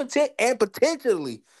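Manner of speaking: strong, hard stress on the word potentially. Speaker complaining about how a man treats people, with emphasis on "potentially". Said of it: "emphasis on potentially".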